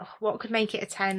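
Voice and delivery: ordinary talk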